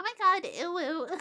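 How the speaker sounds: very high, very loud, grating, annoying whine. Speaker recalls doing different voices on a stream: high-pitched annoying voice. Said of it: "I went as high pitched and and annoying as I could".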